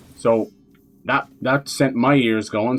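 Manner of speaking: usual speaking voice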